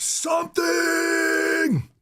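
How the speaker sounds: high, long, drawn-out yell. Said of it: "And he just yelled".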